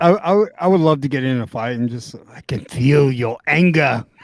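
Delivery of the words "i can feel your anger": slow, drawn-out, level taunting voice. Joking about a fight, speaking in emperor voice. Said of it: "Why are you talking to me in emperor voice?".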